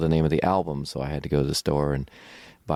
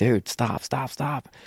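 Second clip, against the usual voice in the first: mock screaming, high and drawn out; 9 semitones higher than usual. Retelling running downstairs to stop a friend walking past: imitating own past screaming. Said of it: "I'm screaming at him".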